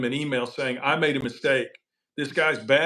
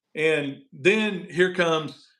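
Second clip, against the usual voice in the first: normal talking voice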